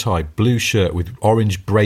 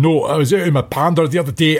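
heavy, thick, put-on Glaswegian accent, pitched high; 6 semitones higher than usual. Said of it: "someone with a really thick Glaswegian accent".

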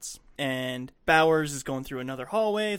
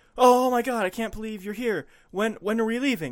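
high, frantic, panicking pleading tone; 6 semitones higher, 4 dB louder than usual. Retelling a film scene where a rescued man speaks: imitating a panicking man. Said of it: "the guy's panicking".

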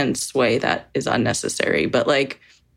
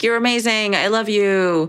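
hollered, high, drawn-out shout; 8 semitones higher than usual. Recounting a man in the crowd repeatedly interrupting her: retelling a shout. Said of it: "shouting like".

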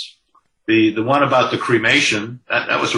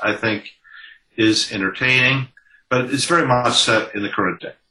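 normal talking voice

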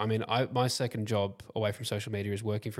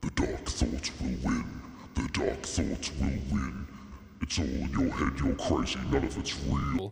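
very low, deep processed effect voice; 8 semitones lower than usual. A podcast host addresses anxious listeners using a voice effect. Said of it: "I just wanted to use that voice effect".

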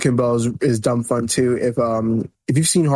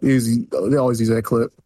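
ordinary talk

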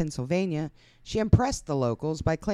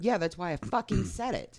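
hostile, irritated, combative, annoyed snap; 4 dB quieter than usual. Answering another speaker who explained something already said: hostile. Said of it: "Why are you so hostile".

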